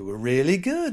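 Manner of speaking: imitated surprised tone. Retelling how people praised the show in the classroom: imitating a surprised tone. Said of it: "they were very surprised".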